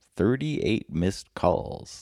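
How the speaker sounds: slow, drawn-out words. Lucilius answering the bartender after checking his phone, said slowly. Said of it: "Lucilius slowly said, then chuckled".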